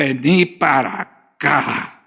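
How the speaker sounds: stern, cross angry-father voice calling out. Talking to the audience about parents, imitating an angry father calling his kids over.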